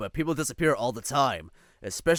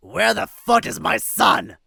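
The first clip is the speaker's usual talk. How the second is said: put-on rough, slurred drunken yell, loud and slow; 9 semitones higher, 8 dB louder than usual. Reading a story aloud, a drunk man points and yells at the employees: drunken, slurred yelling. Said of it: "points and yells at the employees".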